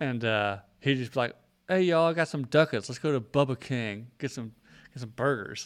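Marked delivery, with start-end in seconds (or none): 1.7-5.7 put-on street slang, heavily laid on. Retelling a classmate who claimed Compton roots: imitating Randy's put-on Compton slang.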